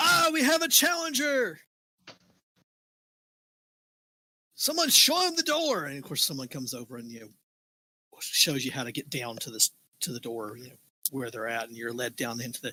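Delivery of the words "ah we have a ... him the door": very high, drawn-out arena announcer proclaiming. Voicing the announcer who greets a new challenger: arena announcer voice. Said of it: "the announcer says".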